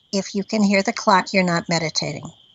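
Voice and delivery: ordinary talk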